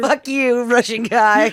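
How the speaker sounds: high, slow, barely holding back laughter. Retelling a film line said while fighting laughter: imitating someone holding back laughter. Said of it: "trying really hard not to laugh".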